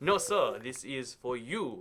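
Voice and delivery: exaggerated, slow, horrible put-on Japanese accent. Acting out someone's reply in a horrific japanese accent. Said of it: "I'm doing a horrific Japanese accent".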